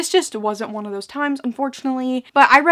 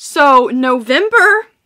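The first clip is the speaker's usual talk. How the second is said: loud voice crack on "November"; 7 dB louder than usual. Vlogger introducing the books read in November, with a voice crack. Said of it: "What was that voice crack I just had?".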